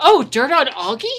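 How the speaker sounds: mock, sudden, loud, high outright blurt. Retelling what she said out loud in the moment, retelling a blurt. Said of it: "she outright blurts".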